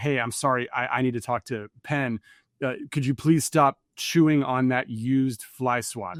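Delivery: plain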